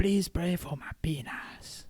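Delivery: put-on Dutch accent. Correcting a friend's accent attempt as sounding Dutch, in a put-on Dutch accent. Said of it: "It's like Dutch".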